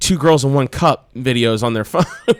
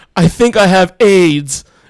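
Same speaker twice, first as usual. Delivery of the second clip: loud, slow, play-acted crying voice; 4 semitones higher, 6 dB louder than usual. Retelling a brother's words on the steps: imitating someone crying. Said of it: "And he started crying".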